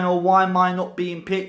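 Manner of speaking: ordinary talk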